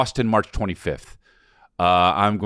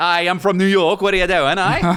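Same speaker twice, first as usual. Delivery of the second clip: put-on voice, pitched very high; 11 semitones higher, 4 dB louder than usual. Joking with the other speaker, doing an Anthony LaPaglia impression. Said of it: "I'm Anthony LaPaglia".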